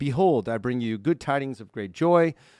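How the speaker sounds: plain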